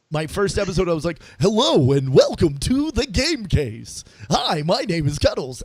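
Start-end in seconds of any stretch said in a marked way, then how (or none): 1.4-5.6 put-on radio announcer delivery. Recalling the podcast's first episode intro, in a fake radio guy voice. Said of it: "I'm putting on fake radio guy voice".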